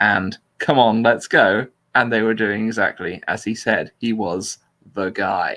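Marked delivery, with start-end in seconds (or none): none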